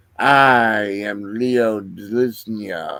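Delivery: hateful, grinding, rasping ghost voice. Narrator voicing a skeletal figure in a dark void, rasping figure voice. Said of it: "the figure rasps".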